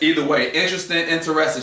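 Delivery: ordinary talk, nothing marked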